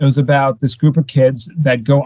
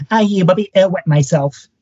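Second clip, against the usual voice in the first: high-pitched, frightened little cartoon pig voice; 6 semitones higher than usual. Retelling a favorite Space Jam moment when Porky Pig is scared: Porky Pig voice. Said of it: "one of the Monstars scares Porky Pig and he goes".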